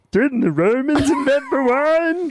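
very high-pitched, slow, unhurried voice. Playing a pretend recorded grab of Jared saying a line: Jared impression. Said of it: "That's a spitting image of Jared".

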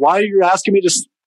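high mock yell. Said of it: "You're yelling at me like it's an assault".

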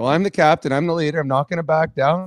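ordinary talk, nothing marked

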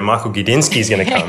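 usual speaking voice

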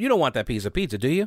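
fast, leading, presumptive delivery. Demonstrating how to ask for a piece of pizza, as a leading presumptive question. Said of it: "you need to say it like this".

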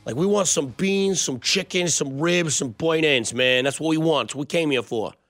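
put-on thick, heavy Buffalo accent. Imitating Buffalo fans arriving at a Kansas City barbecue restaurant, thick Buffalo accent. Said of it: "the thickest Buffalo accent".

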